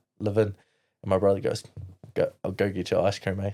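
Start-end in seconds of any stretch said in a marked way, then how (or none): none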